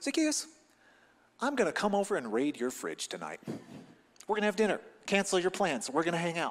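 very friendly, accepting, non-judgmental tone. Retelling a story, the speaker quotes a friendly self-invitation: acting out a friendly tone. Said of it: "in the most friendly, non-judgmental tone".

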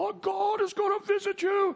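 very high-pitched, slow, drawn-out yelling. Retelling a fraud being backed out the door: imitating someone screaming. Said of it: "he's screaming and yelling at the pastor".

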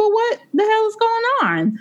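high, shocked, stunned exclamation full of disbelief.

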